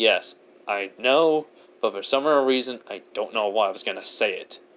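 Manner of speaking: ordinary talk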